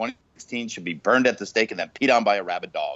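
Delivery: ordinary delivery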